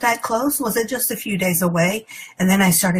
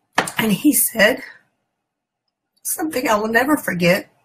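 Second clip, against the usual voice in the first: speaking through tears, crying; 3 semitones higher than usual. Recalling words someone once told her that she'll never forget: crying. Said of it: "I'm sorry, I'm crying".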